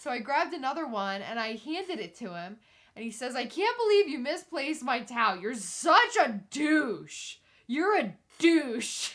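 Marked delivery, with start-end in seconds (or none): 3.4-9.1 mock slurred drunk speech, louder. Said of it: "he's slurring his words".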